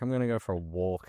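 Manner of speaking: ordinary talk, nothing marked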